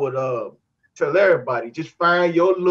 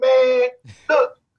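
worked-up, excited, raised, pitched-up outburst; 8 semitones higher than usual. Retelling how a man pitching to him got excited: retelling an excited raised voice. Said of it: "kind of excited and raise his voice like".

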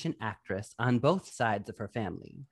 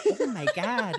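mock Midwestern Michigan accent, higher pitch; 8 semitones higher than usual. Imitating the mom character from a movie: imitating the mom's Midwestern accent. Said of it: "her accent is so".

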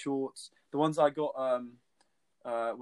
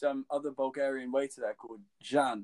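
usual speaking voice

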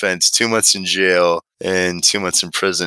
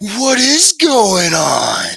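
put-on scream, higher; 14 semitones higher, 3 dB louder than usual. Retelling how an inmate in line stopped and screamed at a kid: imitating an inmate screaming. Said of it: "just stopped and screamed".

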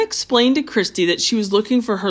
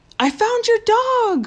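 shrill, delighted, drawn-out excited shout; 13 semitones higher than usual. Reading a character running back to a lady in a store, excited shout. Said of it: "Christy shouted with excitement".

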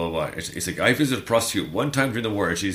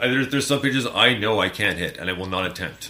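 ordinary delivery

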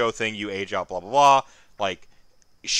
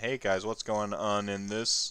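put-on deadpan delivery, quieter; 9 dB quieter than usual. Retelling how Heywo walks in and greets everyone, imitating Heywo's deadpan. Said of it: "And just like deadpans".

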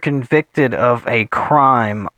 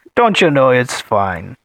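Canadian accent sliding into an Irish accent; 2 semitones lower than usual. Joking about Canadians, the speaker imitates them in a Canadian impression sounding Irish. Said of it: "That sounded Irish for a second".

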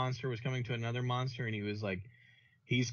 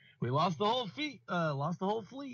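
put-on joking tone, much higher; 8 semitones higher than usual. Speaker quotes a movie line the way he said it, in a mock joking tone. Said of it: "in his joking tone".

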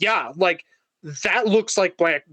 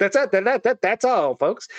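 stuttering, stammering cartoon character voice; 3 semitones higher than usual. Ending a joke with a cartoon sign-off: Porky Pig voice. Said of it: "I sound like Porky Pig there".

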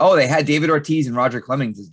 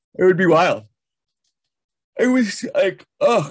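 talking through a yawn, pitched up; 6 semitones higher, 3 dB louder than usual. Speaker chatting with a co-host about baseball broadcasts, yawning while speaking. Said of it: "sorry, I'm yawning".

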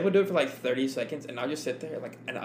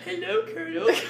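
silly little dumb voice, pitched way up. Showing the voice the group all puts on with each other, little dumb voice. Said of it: "We all kind of have this like little dumb voice".

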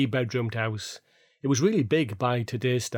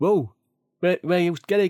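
acted out, loud, pitched-up hollering shout; 6 semitones higher, 5 dB louder than usual. Recalling his dad calling him in from the park at night, imitating dad shouting. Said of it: "me dad would be shouting".

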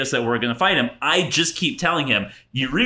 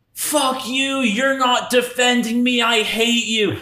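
mock, shrill, very high angry shout; 9 semitones higher than usual. Retelling how a drunk girl answered her older brother: imitating someone yelling. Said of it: "she yells back at him".

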